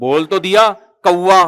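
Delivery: mock very slow, drawn-out delivery, tone faintly changed. Storyteller acting out the son answering his father's repeated question, retelling son's slightly changed tone. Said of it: "थोड़ा सा बेटे का लहजा क्या हो रहा है? चेंज।".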